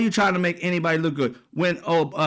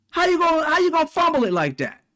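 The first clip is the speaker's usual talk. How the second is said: play-acted, very high, screaming hollering; 11 semitones higher than usual. Acting out viewers screaming at a journalist on TV: imitating someone screaming at TV. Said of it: "You screaming at it like it's a football game".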